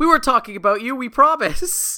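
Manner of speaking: very high, loud, guilty-sounding suspicious protest. Retelling a scene where Buster answers Jenna: suspicious Buster voice. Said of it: "the most suspicious way conceivably possible".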